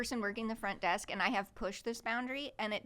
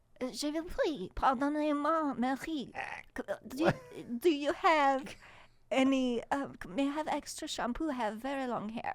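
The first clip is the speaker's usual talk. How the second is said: fake French accent, loud and very slow; 4 semitones higher, 5 dB louder than usual. Calling the front desk for extra shampoo after being asked for a different voice: put-on French accent. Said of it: "I was trying to be French".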